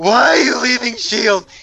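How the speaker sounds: play-acted, far too loud, high-pitched blurt. Retelling how a companion nearly blew their cover, retelling a loud outburst. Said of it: "He said it so loud".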